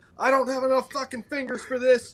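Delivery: very high, loud, shrieking scream. Retelling a range story about a student struggling with a malfunction drill: imitating someone screaming. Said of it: "he's screaming".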